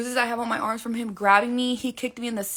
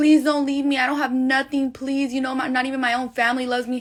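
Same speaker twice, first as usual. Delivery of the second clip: put-on tearful, begging voice with crying. Retelling how he begged on his knees: imitating someone begging and crying. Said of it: "begging me, crying to me".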